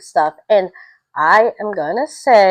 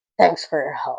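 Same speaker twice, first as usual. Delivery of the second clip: put-on grudging but happy tone, lower, quieter; 5 semitones lower, 6 dB quieter than usual. Retelling how a dog owner thanked her for help: imitating a begrudging but happy thanks. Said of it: "she said it begrudgingly, but, but happy".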